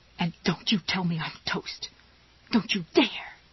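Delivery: stage-whispered, scolding tone. A bound woman answers a young girl's voice, in a whispery, scolding voice. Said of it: "she said in a whispery, scolding voice".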